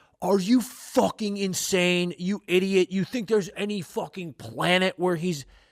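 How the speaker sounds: frenzied ranting. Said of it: "all you crazed Ovi fans who are going".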